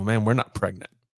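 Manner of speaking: normal talking voice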